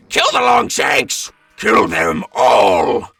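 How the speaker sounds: screamed yell. A rider charging on a giant gecko, screaming out to the other commandos. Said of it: "he screams out to the other commandos".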